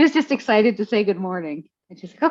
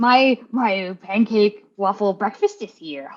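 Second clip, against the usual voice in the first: put-on alien sage voice. Voicing May as she waits at the door for a friend, in a Yoda voice. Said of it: "I've turned into Yoda".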